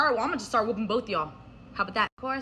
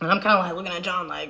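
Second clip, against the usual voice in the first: plain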